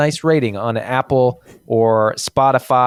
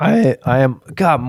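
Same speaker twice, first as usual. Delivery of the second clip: very slow voice, breaking and cracking; 2 semitones higher than usual. Speaker excited about this weekend's game against Berlin, voice cracking. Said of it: "my voice is cracking all night long".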